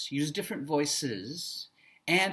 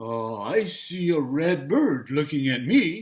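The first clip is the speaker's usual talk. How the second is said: storybook bear voice, louder; 6 dB louder than usual. Speaker demonstrating reading a picture book aloud, Brown Bear voice. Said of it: "what do I think a bear sounds like".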